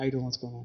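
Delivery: deep, very low, put-on seductive sexy voice. Retelling what he says to someone, in a put-on sexy voice. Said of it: "I get in my sexy voice".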